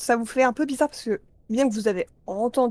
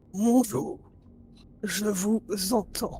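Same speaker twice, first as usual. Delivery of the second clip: very deep halting creature voice, slower; 3 dB quieter than usual. Voicing a creature that speaks the listeners' language with difficulty, very deep halting voice. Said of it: "tu entends une voix très grave, comme quelque chose qui parle votre langue, mais ça semble avoir des difficultés à articuler vos mots".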